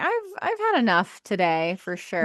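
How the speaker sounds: ordinary talk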